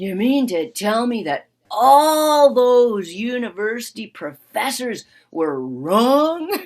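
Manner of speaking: put-on thick sarcasm, slow, drawn out, swooping. Retelling an older brother's question to her: imitating a sarcastic tone. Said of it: "dripping with sarcasm".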